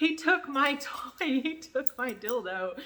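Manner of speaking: very slow, loud, shrill, drawn-out scream at full lungs. Retelling running out of the store after a thief: imitating her own screaming.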